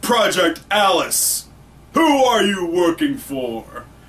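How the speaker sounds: put-on, grilling interrogator voice. Recounting a scene, quoting an interrogator's question in a deep voice. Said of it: "She's got the deep voice going on".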